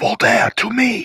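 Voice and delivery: quiet, very high-pitched yell. [name] looks back and summons Alex's character over to him, in a quiet yell. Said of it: "kind of say in like a quiet yell".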